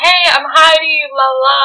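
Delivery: hyper, overeager, overexcited, drawn-out delivery. Retelling meeting a coworker for the first time: imitating own past hyper excitement. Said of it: "I was, like, way too excited".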